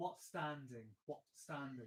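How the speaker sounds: what stressed, standing dropped.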